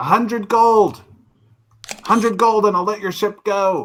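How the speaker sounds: shouting. An unseen voice from below calls up to the crew of the grounded ship, yelling up from below. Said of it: "yells up at you".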